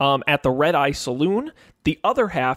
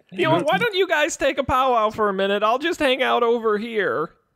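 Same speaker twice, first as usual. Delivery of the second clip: high, panicky laughing woman voice. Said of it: "Okay, Carol".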